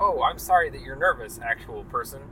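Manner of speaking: ordinary talk, nothing marked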